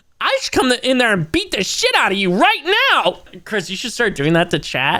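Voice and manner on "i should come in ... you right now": higher put-on voice of an unhinged ranting man. Imitating a performer berating a concert audience member: imitating Wes's unhinged rant. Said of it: "and he's like".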